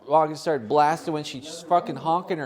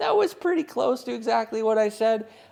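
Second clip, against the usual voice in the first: normal talking voice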